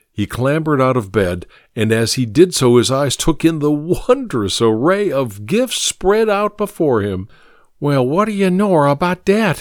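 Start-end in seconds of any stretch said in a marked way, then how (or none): 7.8-9.7 high-pitched muttering. He climbs out of bed, sees gifts spread before him, and mutters. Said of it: "he muttered".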